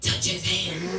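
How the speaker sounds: very deep, dark, low voice. Retelling a voice heard during a quiet, awkward moment, deep, dark voice. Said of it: "a very deep, dark voice that says".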